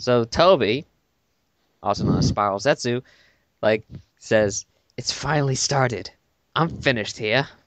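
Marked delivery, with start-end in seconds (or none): 5.0-7.5 put-on speaking in British accent. Reading a comic character's line aloud: British accent as Toby. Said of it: "he talks with a British accent".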